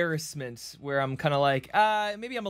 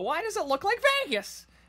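very high, screeching banshee wail. Quoting a favourite line from a YouTube critic's video, screeching like a banshee. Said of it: "why I'm screeching like a banshee".

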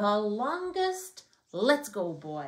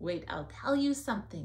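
ordinary delivery

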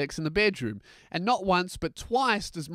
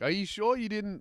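ordinary talk, nothing marked

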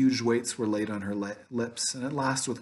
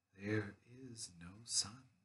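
hushed, solemn, measured, slow, grave and very quiet; 3 semitones lower, 17 dB quieter than usual. The witch repeats her words to the group; slow and grave. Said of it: "Slowly and gravely, the witch repeated".

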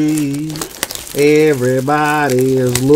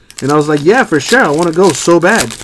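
normal talking voice

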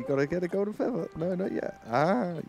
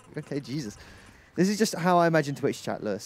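ordinary talk, nothing marked

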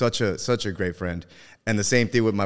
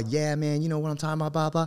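cocky, swaggering bro voice, loud and pitched up; 8 semitones higher than usual. Describing a guy he once heard talking, the speaker imitates him in a loud, swaggering voice. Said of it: "very loud voice. I kind of like swagger to him".

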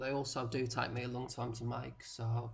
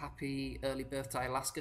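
ordinary delivery

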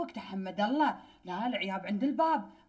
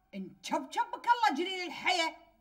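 heated angry outburst, pitch climbing; 9 semitones higher than usual. Speaking to someone who then asks why they are so angry: angry. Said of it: "شنو جو العصبية اللي حاشك؟".

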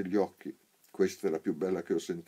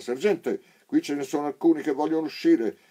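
full-throated, high, loud soldier's yell; 9 semitones higher, 8 dB louder than usual. Narrator reading a soldier at the gate calling out to his sergeant, shouting. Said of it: "con lo stesso tono".

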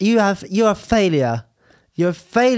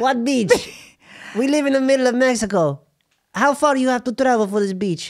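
put-on high-pitched, scolding mother voice, Mexican Spanish accent; 5 semitones higher than usual. In a comedy sketch, a mother scolds Arturo for skipping school, Spanish woman voice. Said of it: "A Spanish woman".

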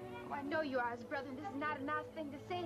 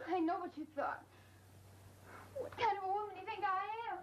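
weeping through the words, tearful, pitched high; 6 semitones higher than usual. Drama scene: a woman answers the man apologizing to her, crying. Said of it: "please don't cry".

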